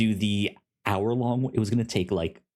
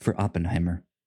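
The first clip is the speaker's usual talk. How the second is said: dry clinical voice, much lower; 3 semitones lower than usual. Joining the other speaker's joke about announcing a title, in NPR voice. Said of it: "in NPR voice".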